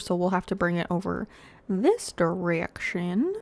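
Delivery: easy, casual deep-south country accent. Planning where to build a road, in a country voice. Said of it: "I said that in a country voice".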